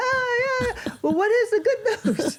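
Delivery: mock very high, squealing scream. Retelling a phone call with mom after good news: imitating mom screaming. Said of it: "So she's screaming now".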